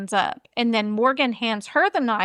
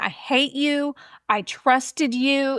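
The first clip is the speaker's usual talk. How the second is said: put-on scream, wailed slowly and mildly; 3 semitones higher than usual. Retelling how a stabbed woman screamed at her attacker, imitating someone screaming. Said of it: "She's like screaming".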